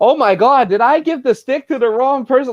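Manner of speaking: play-acted, high, laid-on sarcastic exclamation. Retelling a wrestling storyline bit with a stick: imitating a sarcastic line. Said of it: "Like that sarcastic".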